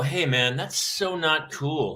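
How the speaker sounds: ordinary talk, nothing marked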